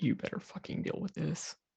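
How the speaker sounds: quiet muttering. Voicing Daryl in a shared story, muttering under his breath. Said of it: "Daryl just under his breath".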